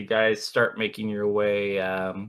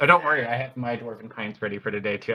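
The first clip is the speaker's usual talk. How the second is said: ordinary talk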